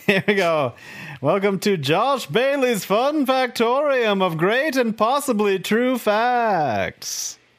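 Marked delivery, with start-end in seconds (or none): 1.2-7.3 put-on pitched-up, drawn-out broadcast announcer voice. Starting the show with reverb, the speaker gives the welcome in TV announcer voice. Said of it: "It's my TV announcer voice".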